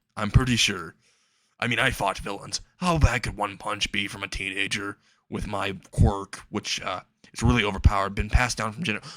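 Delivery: plain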